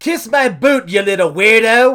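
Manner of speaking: loud, high, barked, bad Irish accent. Giving a contestant a catchphrase to identify, as Becky Lynch in a not-good Irish accent. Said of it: "My Irish accent's not good".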